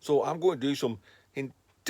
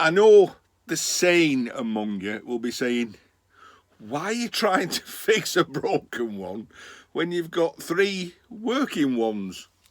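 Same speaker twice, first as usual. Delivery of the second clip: raised voice, laughing through the words; 5 dB louder than usual. Talking to viewers in his shed, laughing while talking. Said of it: "Sorry, I'm laughing".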